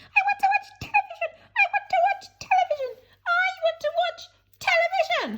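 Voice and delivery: squeaky little voice, very high, tantrum-like. Narrating a story: Mike Teavee throws a tantrum on his mother's palm, squeaking. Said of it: "he scre- squeaked".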